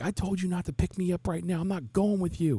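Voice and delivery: acted out, very high, shrill teenage yell. Retelling how a freshman yelled at his mom; imitating a kid yelling. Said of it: "It's just yelling".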